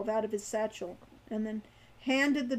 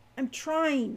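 a note of panic; 3 semitones higher than usual. A companion answers a burned man's shout for help, in a panicked voice. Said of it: "a note of panic in his voice".

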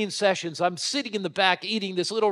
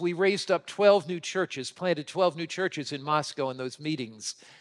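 ordinary talk

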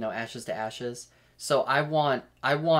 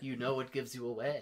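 acted elderly man voice, softer; 11 dB quieter than usual. Describing a man floating down on balloons, doing Katya old man voice. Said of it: "I'm going to do the like Katya old man voice".

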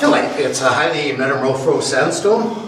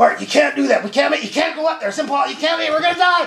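shrill, very high-pitched screaming; 12 semitones higher than usual. Speaker retells driving the truck up a steep hill, imitating Ian screaming. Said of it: "Ian starts screaming".

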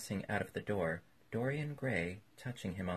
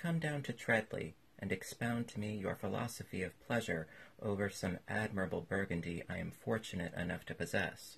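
plain reading voice

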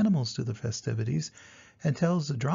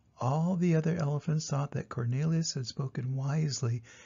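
usual speaking voice

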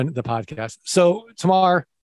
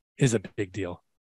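deep, very low put-on news anchorman voice; 9 semitones lower, 7 dB quieter than usual. A podcast host introduces this week's guest, in a put-on anchorman voice. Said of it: "I'm going to put on my anchorman voice".

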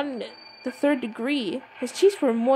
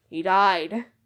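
deadpan, no expression, low flat monotone; 5 semitones lower than usual. Reading a character's reply to a question, in a flat monotone. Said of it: "with that, like, monotone".

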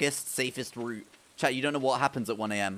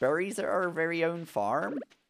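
rural British farmer accent, pitched up; 6 semitones higher than usual. Playing a game, the speaker repeats their own line in a UK farmer accent. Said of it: "that was actually quite a good accent. That was like a UK farmer accent".

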